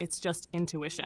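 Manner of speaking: normal talking voice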